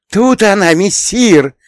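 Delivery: very high, gleeful, joyful shout. The cat returns with the find in its teeth, calling to his master: joyful shout. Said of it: "радостно закричал он".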